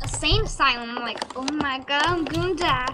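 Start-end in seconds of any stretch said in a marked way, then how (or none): none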